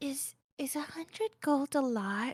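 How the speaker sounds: leaning-in, hushed stage half-whisper. Leaning over to the group at the table to ask a question, half-whispering. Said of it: "leans over to the group at the table and whispers".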